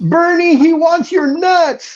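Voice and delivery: mock yelling, very high and shrill. Speaker recalls yelling out to a man given peanuts: retelling a yell. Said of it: "and I would yell out".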